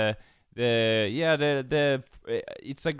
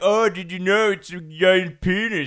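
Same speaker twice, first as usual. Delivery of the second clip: loud, high, drawn-out delivery, spelled out; 6 semitones higher, 5 dB louder than usual. Mimicking how the other speaker sounded when explaining the maypole: imitating Jacob. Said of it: "But you sounded like".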